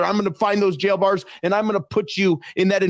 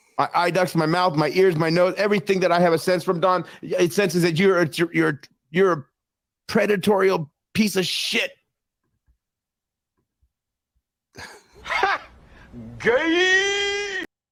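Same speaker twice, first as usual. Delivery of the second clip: tearful, words forced out through crying. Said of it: "What are you crying about, bro?".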